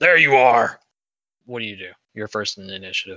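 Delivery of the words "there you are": very loud hobgoblin shout. Game master voices a hobgoblin spotting a player's character, as a loud hobgoblin shout. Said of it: "a very loud hobgoblin shout".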